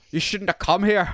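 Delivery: clumsy fake Scottish accent. Quoting a character's line from a movie's end stinger, in a bad scottish accent. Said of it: "like a bad scottish accent me not the actual actor".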